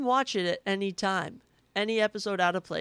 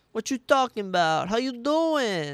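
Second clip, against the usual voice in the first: loud, poor, mobster-style Italian accent; 4 semitones higher, 5 dB louder than usual. Speaker shows the mafia accent they admit they're bad at: bad italian mafia accent. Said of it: "with the Italian, with the mafia accent".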